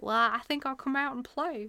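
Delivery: put-on Southern accent. Voicing how the brain talks when there are no expectations, in a put-on southern accent. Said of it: "is your brain Southern?".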